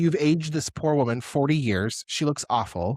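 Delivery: plain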